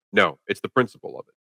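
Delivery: plain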